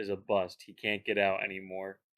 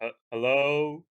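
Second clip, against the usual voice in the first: raised, pitched-up voice, a little stronger; 6 semitones higher, 5 dB louder than usual. Calling out in character in a silent cave: saying hello a little louder. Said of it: "I say hello a little bit louder".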